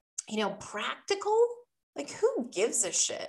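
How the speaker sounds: irritated fed-up tone. Speaker complaining to listeners about a word they dislike, annoyed. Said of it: "Can you hear the annoyance in my voice".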